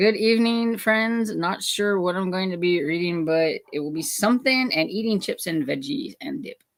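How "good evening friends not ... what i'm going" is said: ordinary delivery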